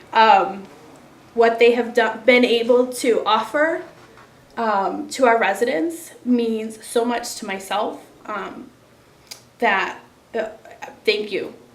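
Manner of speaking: very loud, moved and emotional. Thanking the donors on behalf of the residents, getting emotional. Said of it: "I'm going to get emotional, excuse me".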